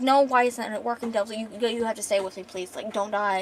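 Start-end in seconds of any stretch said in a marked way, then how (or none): none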